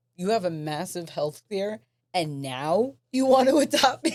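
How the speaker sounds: loud, rising, really mad and indignant retort. Recounting the reaction to the man who asked to adopt them, retelling angry words. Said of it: "I was like really mad about it because I was like".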